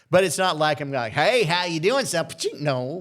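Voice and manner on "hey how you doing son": thick country twang, higher. Joking about sounding too country for a station: exaggerated Okie country accent. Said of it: "the Okie in me comes out".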